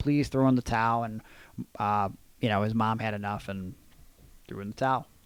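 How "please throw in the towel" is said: put-on crying, pleading voice. Retelling a wrestling match where Owen begged: imitating Owen Hart crying and pleading. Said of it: "Owen started crying and pleading, like".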